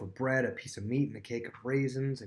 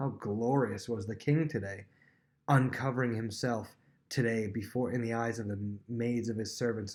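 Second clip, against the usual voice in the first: normal talking voice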